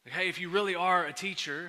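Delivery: ordinary delivery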